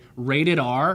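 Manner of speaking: ordinary talk, nothing marked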